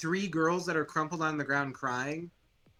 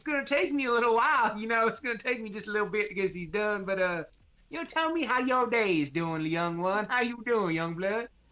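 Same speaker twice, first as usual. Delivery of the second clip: put-on voice of an elderly man; 5 semitones higher than usual. Describing a vision where an old man greets the player: old man voice. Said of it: "he's like".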